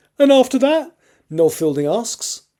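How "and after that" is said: very high, piping voice. Reading a story aloud, a frightened comedian asks a question: high-pitched voice. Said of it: "in a high-pitched voice".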